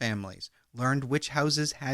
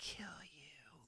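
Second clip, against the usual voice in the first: whispered, very quiet, strange muttering; 25 dB quieter than usual. Describing a caller's strange calls, retelling a high-pitched whisper. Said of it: "whisper in a high-pitched voice like".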